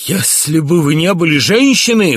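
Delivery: sudden, very loud, high outcry. A prince confronts his mother and cries out at her. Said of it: "вскрикнул он".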